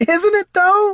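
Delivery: laughing out in a very high voice. [name] replying to Katha calling it disgusting, laughing. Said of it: "laughed [name]".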